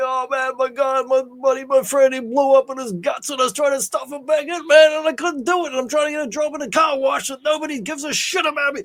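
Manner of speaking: put-on very high, tearful crying breakdown ramble. Retelling a film scene, imitating Stallone's tearful breakdown. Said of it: "he crumbles in pieces like".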